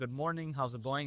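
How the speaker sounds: ordinary talk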